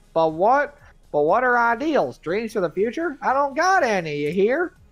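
put-on country bumpkin accent. Reading a game character's lines aloud: country bumpkin accent. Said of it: "ignore my bumpkin-ass accent".

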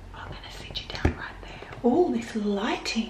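whispered voice. Talking to the camera while Zendaya is asleep nearby, whispering. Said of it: "I'm whispering because Zendaya is asleep".

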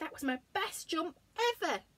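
high, quick cry, cried out sharply. After barely reaching the sandpit in the long jump, a competitor cries out. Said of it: "he cried".

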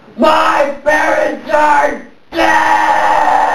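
drawn-out dramatic shouting.

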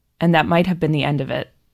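ordinary talk

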